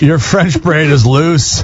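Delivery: slow, insulting, contemptuous delivery. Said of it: "That sounded really insulting the way you said that".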